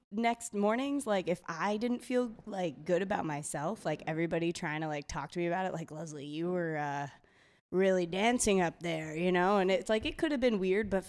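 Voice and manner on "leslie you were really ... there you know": put-on older man voice, slower. Retelling what coworkers said to her the next morning, imitating a 50-year-old man. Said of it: "the impression you just gave sounded like a 50-year-old man".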